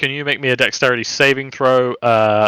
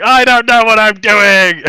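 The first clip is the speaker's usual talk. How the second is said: yelling, raised in pitch and volume; 10 semitones higher, 8 dB louder than usual. Narrator voicing Crim as he tries to stab the lake troll, Crim yelling. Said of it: "you just hear yelling".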